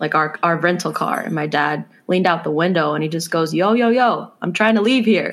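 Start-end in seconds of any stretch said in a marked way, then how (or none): 3.5-5.3 put-on street-tough New York accent, pitched up, yelling. Retelling dad leaning out the car window at a double-parker, New York accent. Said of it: "his New York accent".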